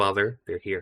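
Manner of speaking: put-on soft, faint little half-whisper in a child's voice. A game master voices a faint voice heard from the dining room: soft childlike voice. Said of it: "You'll hear soft childlike voice".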